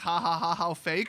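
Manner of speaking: ordinary talk, nothing marked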